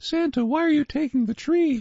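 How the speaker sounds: very high little-girl cartoon voice. Recalling a voice actress's roles, doing the Cindy Lou Who voice. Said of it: "she voiced Cindy Lou Who".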